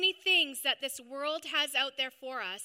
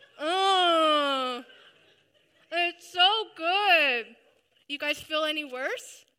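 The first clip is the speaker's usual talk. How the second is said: loud mouth-full talk with a drawn-out "oh"; 2 semitones higher, 7 dB louder than usual. Speaker eating during her sermon, addressing the listeners: talking with mouth full. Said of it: "Why is she talking with her mouth full?".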